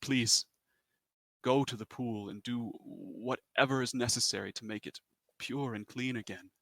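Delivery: distraught, sad, begging, pleading voice. A game master voices a creature asking the players for help, begging. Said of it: "he begs you".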